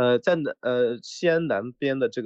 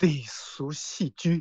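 sultry, seductive, sexy, come-hither voice; 4 semitones higher, 3 dB quieter than usual. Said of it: "要性感哦".

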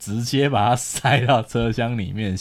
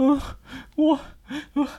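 put-on choked-up sobbing voice, higher pitch. Retelling a phone call where the caller began choking up: imitating someone choking up. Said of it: "电话那头他就开始哽咽".

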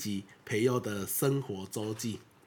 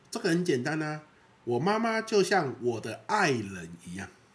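put-on impatient, pitched-up, can't-wait blurt; 5 semitones higher than usual. Speaker retells his son speaking up to his wife, retelling a loud impatient remark. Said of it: "他就大声的跟我太太说".

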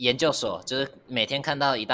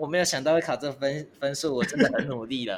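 mock slightly teary, near-crying voice; 4 semitones higher than usual. Retelling telling mom about disappointing exam scores, imitating own slightly teary voice. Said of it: "带着有点哭腔".

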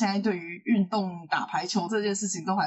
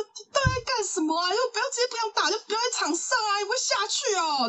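high-pitched, furious scolding. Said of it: "在球场上就是暴骂".

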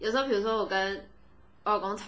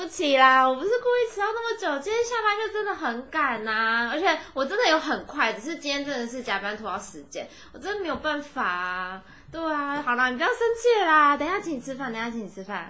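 cutesy, sweet-talking, coquettish, pleading tone; 4 semitones higher than usual. Acting out an apology for being an hour late: coquettish pleading apology. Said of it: "撒娇派".

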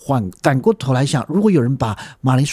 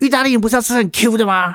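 mock fault-finding complaining tone, pitched higher; 8 semitones higher than usual. Retelling a customer's complaint on request: imitating a complaining customer's tone. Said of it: "你可以模仿他的语气再嫌一次吗？".

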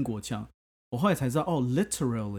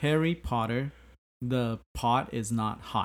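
ordinary plain American accent. Taking turns saying a tongue-twister in different accents, going first with an american accent. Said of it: "我先讲就是普通, 美式".

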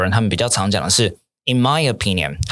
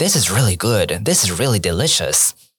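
sincere, heartfelt enthusiastic tone. Showing how to say food tastes good with real feeling, sounding like it's really good. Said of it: "you have to sound like it".

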